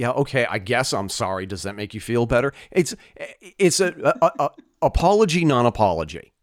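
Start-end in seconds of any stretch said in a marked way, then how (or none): 0.0-2.5 grudging, dismissive delivery with a scoff. Retelling how someone apologizes when asked: imitating a scoffing apology. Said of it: "scoff and say".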